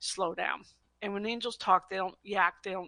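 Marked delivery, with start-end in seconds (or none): none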